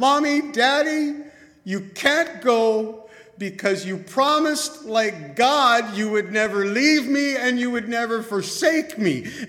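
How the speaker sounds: put-on child screaming at the top of the lungs, high, loud. A father recounts his son screaming as the parents leave the hospital, retelling a child screaming. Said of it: "he is screaming at the top of his lungs".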